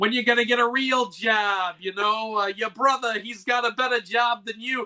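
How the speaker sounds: high, scolding, nagging voice, yelling. Imagining a scholar's wife coming in as he writes: imitating a wife yelling. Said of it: "starts yelling".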